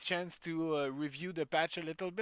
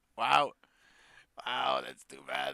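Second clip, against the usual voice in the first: loud, drawn-out laughing while talking; 4 semitones lower, 5 dB louder than usual. Reacting to a viewer saying they are still sick, laughing while talking. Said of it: "Sorry, I'm laughing".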